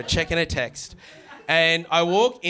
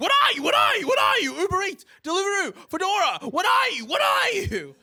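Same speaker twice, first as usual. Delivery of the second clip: put-on, shrill, very high-pitched yelling. Retelling an old lady at a restaurant counter: imitating someone yelling. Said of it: "She just keeps yelling at me".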